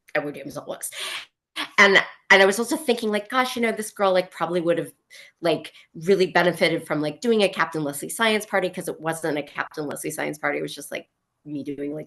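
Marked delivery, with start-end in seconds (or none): none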